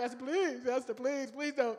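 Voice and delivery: put-on tearful, desperate, crying voice. Retelling how Haman pleads with Esther: Haman begging and crying. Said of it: "Haman is in there begging and crying".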